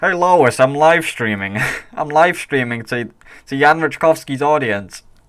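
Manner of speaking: put-on cartoon dad voice. Showing off your voice acting to a livestream audience, in a Peter Griffin voice. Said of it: "I can do Peter Griffin".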